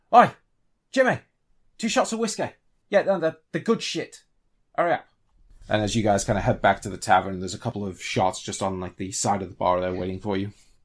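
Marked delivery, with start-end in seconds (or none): 0.1-5.0 loud, pitched-up shout, projected across a room. Game narrator voicing a man heading back to the tavern, shouting at everyone. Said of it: "he kind of shouts at everyone".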